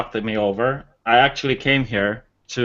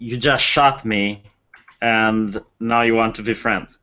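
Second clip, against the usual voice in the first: stern, slow, menacing, intimidating delivery. In character, trying to intimidate someone who shot him: intimidating stern tone. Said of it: "a stern look and go like".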